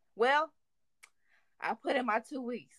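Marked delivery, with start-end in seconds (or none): none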